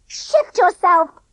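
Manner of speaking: piercing, shrill, very high-pitched voice. Reading a story, a boy behind a box orders someone aside: shrill voice. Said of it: "said the shrill voice".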